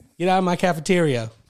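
mock high-pitched yell. Retelling how someone called out over the cafeteria mic: imitating a high-pitched yell. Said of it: "when he would yell".

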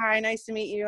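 normal talking voice

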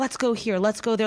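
usual speaking voice

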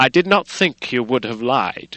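loud, hot, angry outburst. Mr. Hyde keeps speaking to the lawyer, angry. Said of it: "with a flush of anger".

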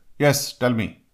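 exceedingly aggressive, pushy tone. Acting out a job seeker's greeting to a recruiter: imitating aggressive job seeker. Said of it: "some guys are exceedingly aggressive".

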